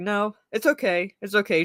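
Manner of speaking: ordinary delivery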